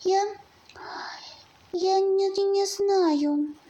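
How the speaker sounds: trembling whisper. Narrator reads the frightened little hare answering the hedgehog, trembling whisper. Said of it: "дрожащим голосом прошептал зайчонок".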